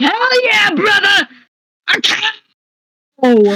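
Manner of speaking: very high, very slow, swooping, excited, enthusiastic shout. Voicing a character who snaps and points enthusiastically: enthusiastic character shout. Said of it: "snaps and points at them very enthusiastically".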